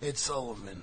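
mock folksy old-timer voice, reminiscing tone.

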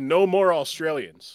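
usual speaking voice

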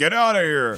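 gruff, loud huffed delivery. Mimicking the guy who does the voice on the Indiana Jones ride, huffing, gruff Harrison Ford voice. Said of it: "it's just it's a huff and a gruff".

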